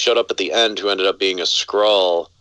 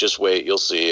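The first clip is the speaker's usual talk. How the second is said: usual speaking voice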